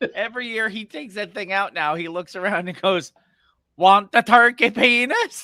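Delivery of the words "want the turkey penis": put-on, clumsy Swedish accent, loud and slow. Speaker imitating a man's yearly holiday joke, bad Swedish Chef accent. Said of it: "with a bad Swedish chef accent".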